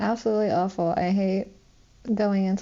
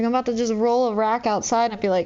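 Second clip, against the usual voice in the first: ordinary talk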